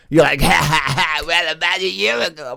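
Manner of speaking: put-on very high, very loud, shrill, drawn-out gleeful laugh. Imitating the other speaker's excited way of starting a story: imitating someone excitedly laughing. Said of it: "whenever you're really excited saying certain things".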